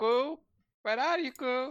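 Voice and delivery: loud shouting, yelling. Calling out in character for a missing companion while sneaking: shouting. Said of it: "I try to, like, uh, shout, like".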